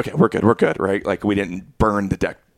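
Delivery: ordinary delivery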